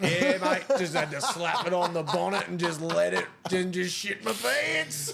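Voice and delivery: put-on rural Australian accent. Retelling the words of an australian who talks unlike city folk: imitating an australian who talks like that. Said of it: "Australians out there that talk like that".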